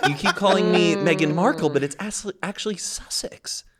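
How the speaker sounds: play-acted snooty, superior, condescending tone. Acting out Meghan putting Mindy Kaling down, in a mock-snobby Meghan Markle voice. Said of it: "Meghan just gives this snobby".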